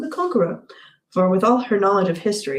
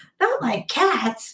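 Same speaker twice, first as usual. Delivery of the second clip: shrill, passionate, impassioned cry, higher pitch; 5 semitones higher than usual. Reading the story aloud, the narrator voices the mouse answering Alice in a shrill, passionate voice. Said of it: "cried the mouse in a shrill, passionate voice".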